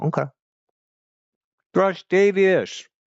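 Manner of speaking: very high voice, words through a full mouth. Greeting someone who remembered them, talking with food in mouth. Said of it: "I have food in my mouth".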